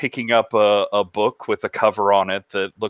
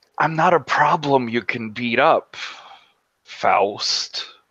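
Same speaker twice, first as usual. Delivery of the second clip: put-on air-quote tone, slower; 3 semitones higher than usual. Retelling what he said to Faust, with air quotes in his voice. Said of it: "he says with air quotes in the in his voice".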